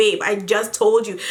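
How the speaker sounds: ordinary talk, nothing marked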